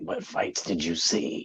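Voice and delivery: dead-serious, menacing, threatening whisper, very quiet. Show how the boxer sounds when he means business, imitating Mike Tyson whispering. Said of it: "when he start whispering like".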